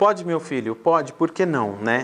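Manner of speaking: ordinary delivery, nothing marked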